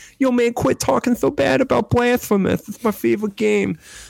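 high, rough lisping voice. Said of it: "my impression sounds more like [name] with a lisp".

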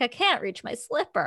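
put-on helpless giggling, laughing through the words mid-sentence. Retelling a scene, the speaker quotes a woman who lost her slipper: mock laughing while talking. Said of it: "laughed like".

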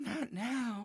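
high, soft moan. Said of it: "she starts moaning like".

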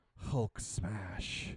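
soft, hushed, breathy whisper under the breath. Imagining a quiet candlelit movie scene and acting out the line: whispering. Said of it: "looks at him and whispers".

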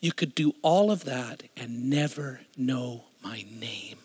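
acted, tearful, weeping voice through streaming tears. Retelling a friend's words at dinner: imitating tearful speech. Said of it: "he starts weeping, tears streaming down his face".

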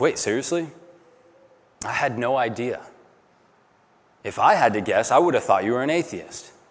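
mock-nonchalant, casual, offhand tone. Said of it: "Cam casually then and nonchalantly says".

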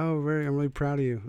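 high-pitched, condescending, patronizing praising tone. Retelling a partner's reply to finishing a book: imitating patronizing praise. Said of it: "like you tap a dog on the head".

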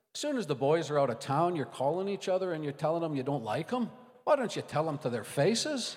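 put-on Irish-accented voice. Retelling a pastor scolding others, irish accent. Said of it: "need an Irish accent".

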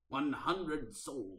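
put-on slow, drawn-out pirate voice with Scottish accent. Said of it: "so I can do it in a Scottish accent".

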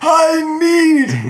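squeaky, very high, loud, playful cartoon voice. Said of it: "That's a fun voice".

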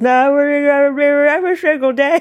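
mock toothless mumble. Describing a show character who isn't wearing her dentures, imitating toothless mumbling. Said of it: "she just like mumbles".

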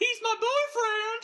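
mock shrill cry, shouted out way up high. Retelling a scene, the speaker imitates Beverly trying to stop it: imitating Beverly shouting. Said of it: "by shouting out".

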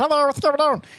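very high, squeaky cartoon voice. Recalling a voice done in school that classmates called Meatwad, in Meatwad voice. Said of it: "I did that voice".

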